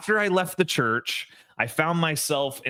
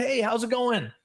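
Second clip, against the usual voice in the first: really excited, bubbly, pitched-up voice; 8 semitones higher than usual. Retelling running into a guy in the hallway, imitating an excited greeting. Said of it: "really excited".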